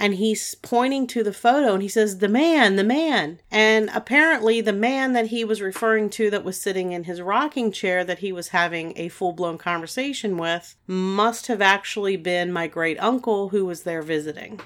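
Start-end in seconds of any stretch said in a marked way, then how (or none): 2.2-3.4 put-on eager, urgent, loud, excited yell. Retelling how the son pointed at a photo: imitating an excited yell. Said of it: "he gets excited and he starts yelling".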